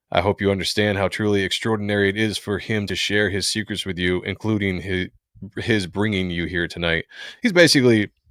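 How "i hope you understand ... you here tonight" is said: usual speaking voice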